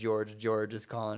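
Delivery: plain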